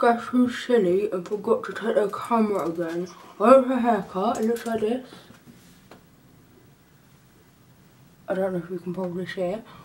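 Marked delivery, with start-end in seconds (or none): 3.4-9.6 whitening-strip speech, much lower and faster. Getting ready for prom, talking with whitening strips on. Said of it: "I'm talking like this because I've got my whitening strips on my teeth".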